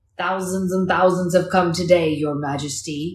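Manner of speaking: loud, deep, growly bear voice. A polar bear answers the queen's question: deep, growly bear voice. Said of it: "the polar bear said in a deep and growly voice".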